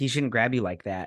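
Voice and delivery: plain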